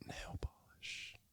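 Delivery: slow, soft, emphatic whisper. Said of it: "Why are we whispering?".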